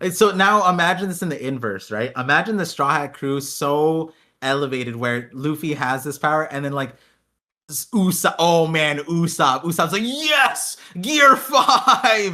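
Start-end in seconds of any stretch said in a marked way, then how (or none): 10.0-12.3 mock frothing, very high-pitched, frenzied, excited yell. Imagining a character's reaction to a new power: Usopp frothing with excitement. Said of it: "is frothing at the mouth at it".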